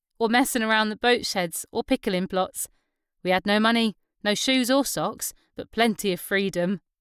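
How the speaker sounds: ordinary delivery, nothing marked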